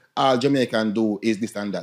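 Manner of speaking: usual speaking voice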